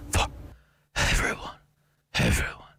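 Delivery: put-on, mock breathy voice. Mocking a political ad's closing line, in a mock breathy voice. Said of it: "breathy voice".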